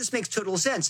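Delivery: ordinary delivery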